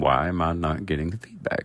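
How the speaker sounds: ordinary talk, nothing marked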